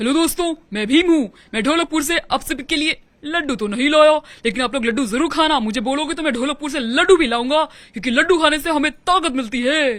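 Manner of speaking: loud kids' cartoon hero voice. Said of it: "mimicry करूँ?".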